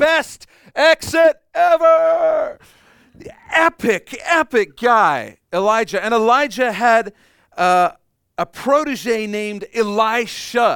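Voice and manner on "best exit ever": loud, raspy, rough yell with ever drawn out. Retelling the chariot of fire taking Elijah up to heaven: acting out Elijah yelling. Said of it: "Elijah looks back and yells".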